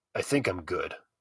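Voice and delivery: muttering. Clint turns down Darden's offer over the card deck, muttering. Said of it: "Clint muttered".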